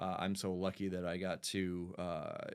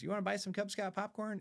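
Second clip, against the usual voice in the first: tiny, very high squeaky voice, rattled off fast; 13 semitones higher than usual. A father retelling his son's Cub Scout popcorn pitch, in a squeaky little voice. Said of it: "in that squeaky little voice".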